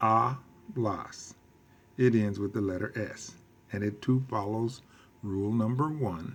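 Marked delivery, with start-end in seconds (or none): 0.0-1.3 hablas with first syllable ha stressed. Spanish lesson on stress rules, saying hablas with stress on HA. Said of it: "The stress is on the next to the last syllable, in this case, a".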